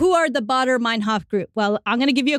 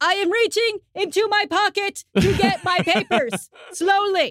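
loud, high, raised called-out yell; 7 semitones higher than usual. Retelling what a band member called out to police surrounding their van: retelling a yell. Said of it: "and Chris yelling".

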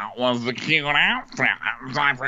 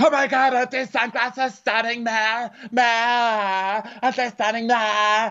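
forced, very high, cheerful, gushing put-on fun voice; 11 semitones higher than usual. Retelling a reality show scene, imitating a put-on fun voice. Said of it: "she's doing her fun voice".

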